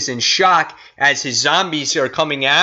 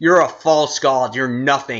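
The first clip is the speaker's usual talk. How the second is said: put-on condescending villain voice. Retelling a comic scene where Thanos talks down to Doom: imitating Thanos talking down. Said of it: "he's talking down to Doom".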